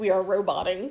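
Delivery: ordinary talk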